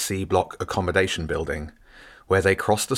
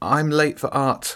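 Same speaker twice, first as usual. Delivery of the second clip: chattering teeth, much higher; 7 semitones higher than usual. Nick answers the caretaker who caught him, speaking through chattering teeth. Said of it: "Nick managed through his chattering teeth".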